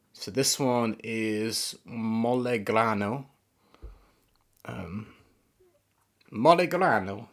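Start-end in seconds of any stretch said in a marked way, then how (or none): 6.3-7.2 best-attempt put-on Italian accent. Naming the next one on the list in their best Italian accent. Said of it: "That's my best Italian accent".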